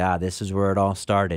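usual speaking voice

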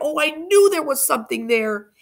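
high-pitched cry. Narrator reading the first-person narrator's reply to Andrew, crying out. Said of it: "I cried".

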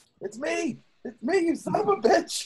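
shrill, acted scream climbing very high. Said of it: "while I'm screaming at the dwarf".

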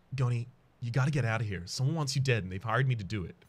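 urgent, confidential, pressing tone. Narrator voicing a guard warning goni so other guards can't overhear, urgent hush. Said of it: "you drop your voice to an urgent hush".

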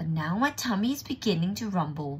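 plain reading voice

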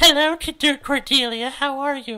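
put-on voice pushed very high in pitch. Reading a story aloud, mimicking how Pauline talks: imitating Pauline's high-pitched voice. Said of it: "how she gets all high-pitched".

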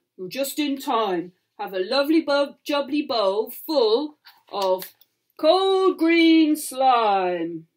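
friendly, growling, booming giant voice, slow. Reading a bedtime story, the giant welcomes the hungry pirates in a big giant voice. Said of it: "growled a giant. / Cried the giant as he splashed across the stream. / growled a giant".

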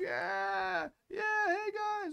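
put-on very high, very slow, drawn-out drunk voice. Retelling how a stranger came up to the group: imitating a drunk man. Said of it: "this drunk dude comes up. He's like".

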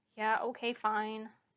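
unenthusiastic, mumbled delivery. Answering a mother's reassurance, the narrator replies, mumbled without enthusiasm. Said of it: "I mumbled without any enthusiasm".

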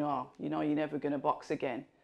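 ordinary talk

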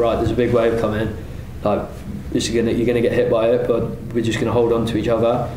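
usual speaking voice

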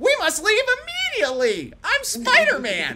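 put-on very high, very loud shout in a little boy's voice. Taking over the reading, the speaker voices Spider-Man: little boy's Spider-Man voice. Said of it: "My Spider-Man's just a little boy's voice".

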